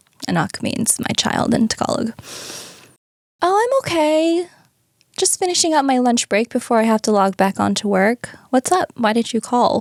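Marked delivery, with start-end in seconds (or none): 3.4-9.8 super chill, relaxed, nonchalant tone. Retelling a phone call from their dad, acting out their own super chill reply. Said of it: "Again, super chill".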